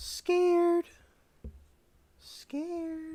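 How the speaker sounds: squeaky, very high, silly goofy voice. Repeating a word for viewers, in a funny voice. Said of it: "I'm saying scared in a funny voice".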